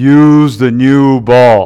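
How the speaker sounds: very slow, booming voice. Telling a golf joke, the speaker voices God speaking from above in a God voice. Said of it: "That's my God voice".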